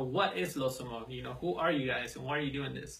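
ordinary talk

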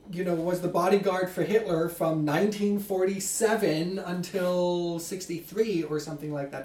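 normal talking voice

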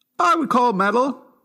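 high-pitched voice. Answering whether a band counts as metal: voice going very high. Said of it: "your voice went very high there".

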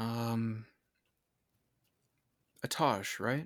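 warm, welcoming speaking tone. Voicing a being in the fire, greeting the caster: warm voice. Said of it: "a really warm voice".

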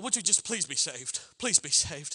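mock imploring, pleading and begging, repeated. Describing how believers do evangelism, acting out mock begging. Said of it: "Where we beg people".

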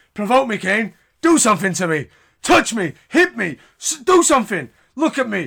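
furious taunting yell, high and loud.

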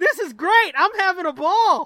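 very loud, high-pitched yell. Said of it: "The cannibal at the bottom yells".

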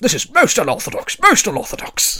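frantic, muffled yelling, very loud and high. Narrating the scene, voicing someone behind a door that won't open: muffled shouts. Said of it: "sort of muffled shouts and screams and shouts of".

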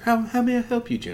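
meek, humble voice, pitched high. Describing a character who arrives in a wheelchair, imitating a humble history professor. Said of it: "humble a humble history mm-hmm. professor".

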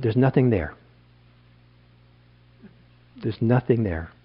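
very stern, dismissive brush-off. Retelling a teacher's answer about a spirit house: imitating a stern reply. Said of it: "very sternly".

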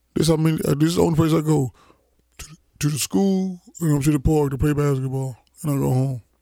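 mocking put-on dumb-guy voice. Retelling what he said to Coach Mike, in a dumb put-on voice. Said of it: "you sure gave him that dumb ass voice".

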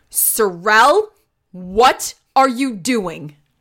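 very slow, cranky, stern schoolteacher voice. Telling a story where Marin calls Sorrel, Marin's cranky teacher voice. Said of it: "she uses her teacher voice".

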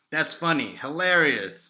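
lightly sarcastic, insincere-sounding praise tone. Reacting to a played sound clip: sarcastic. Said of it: "I sense a bit of sarcasm here now".

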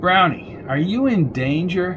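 plain reading voice

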